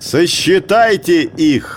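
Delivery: contemptuous shout. Narrator reads the herder shouting at the village crowd, contemptuous shout. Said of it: "презрительно крикнул Маугли".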